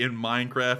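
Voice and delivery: ordinary talk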